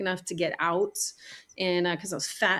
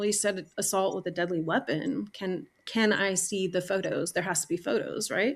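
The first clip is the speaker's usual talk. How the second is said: plain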